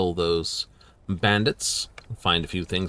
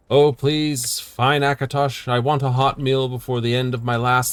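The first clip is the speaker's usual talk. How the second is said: put-on praying voice, high and slow; 6 semitones higher, 5 dB louder than usual. Imagining someone below praying as a flaming goat flies over: put-on praying voice. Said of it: "Could be a guy praying".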